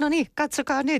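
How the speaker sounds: very high, gleeful, acted-out delighted hollering. Recalling watching a development cooperation series, speaker reenacts their own shout: retelling a delighted shout. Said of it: "monessa kohtaa niin huusin".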